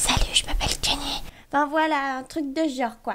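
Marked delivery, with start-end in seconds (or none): 0.0-1.2 whispered, without full voice. Showing what whispering sounds like, whispered. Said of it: "chuchoter, en fait, ça donne plutôt ça".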